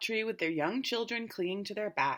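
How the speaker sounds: ordinary delivery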